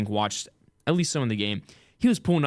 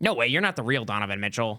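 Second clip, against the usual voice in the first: put-on trash-talking kid voice. Reenacting a game chat, playing the little kid who trash talks. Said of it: "I'll be the little kid".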